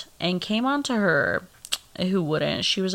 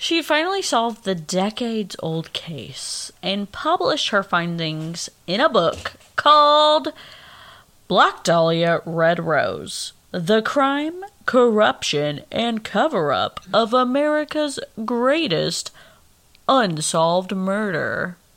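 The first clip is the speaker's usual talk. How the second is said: put-on radio announcer broadcast voice; 4 dB louder than usual. Host reading out a news item, radio announcer voice. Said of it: "That was my radio voice".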